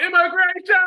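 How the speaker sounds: very high, loud heckling yell. Retelling what hecklers shout at a comic on stage: imitating a heckler yelling. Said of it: "you just hear them yelling out".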